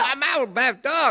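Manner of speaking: high-pitched, loud scolding tone.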